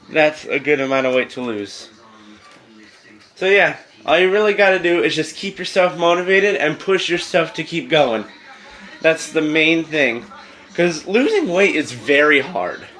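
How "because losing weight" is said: voice breaking and cracking mid-line. Giving weight-loss advice while still sick, voice cracking. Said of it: "my voice cracked".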